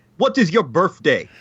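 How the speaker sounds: terrible fake Russian accent. Asking Kevin a question, in a bad Russian accent. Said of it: "My Russian accent is so bad".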